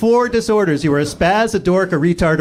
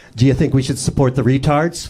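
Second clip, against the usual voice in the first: thick, mock condescending, talking-down tone; 7 semitones lower than usual. Imagining someone asking a question, imitating dripping condescension. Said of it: "just dripping with condescension and was like".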